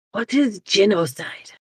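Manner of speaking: soft, leaning-in half-whisper. Playing a character who leans over to ask something: half-whispering in character. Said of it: "lean over and whisper".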